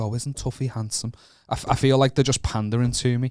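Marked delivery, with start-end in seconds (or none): 0.0-1.1 doting, gushing, fawning mother voice. Retelling a friend's mum's compliment: imitating a friend's mum. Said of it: "my mate's mum will be like".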